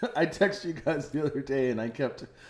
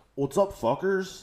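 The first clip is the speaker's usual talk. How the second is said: brash, insufferable American bro voice, pitched up; 5 semitones higher than usual. Describing an insufferable guy who calls everybody fucker, impression of an American guy. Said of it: "This is what he sounds like".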